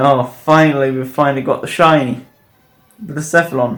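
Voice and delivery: normal talking voice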